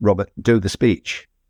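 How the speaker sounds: calm, simple, low-key, understated delivery. Retelling a teacher quietly telling him to begin: imitating someone speaking very quietly. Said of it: "he said very quietly to me".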